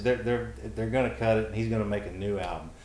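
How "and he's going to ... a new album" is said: normal talking voice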